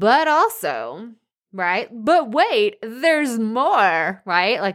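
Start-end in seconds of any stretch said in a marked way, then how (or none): 1.9-4.2 slow, drawn-out, cheesy TV infomercial pitchman voice. Promoting an online course program with a sales line: infomercial voice. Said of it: "that was my infomercial voice".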